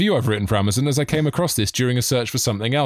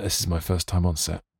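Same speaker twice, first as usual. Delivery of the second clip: quiet voice, pitched much lower; 8 semitones lower, 6 dB quieter than usual. Retelling what a fellow performer said to the speaker on an improv shoot, quietly. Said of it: "just quietly went".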